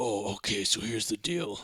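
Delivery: low-key, hushed stage whisper. Describing how a man talks in every movie, the speaker imitates a half-whisper. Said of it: "Every movie he whispers into, he's like".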